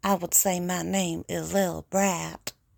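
put-on Southern belle accent. Demonstrating how different accents would say the same sentence: Southern belle accent. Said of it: "if I was a Southern Belle".

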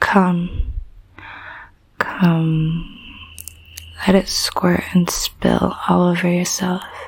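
seductive, sultry, velvet-smooth whisper.

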